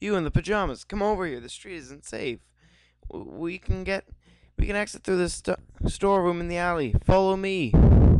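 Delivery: put-on high, attempted girly voice.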